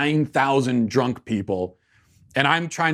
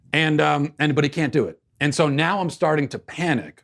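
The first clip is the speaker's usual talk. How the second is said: ordinary talk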